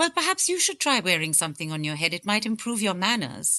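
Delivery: put-on crisply spoken British accent. Retelling a companion's retort to a man who mocked their headwear: Amina's crisp British accent. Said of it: "with a very crisp British accent".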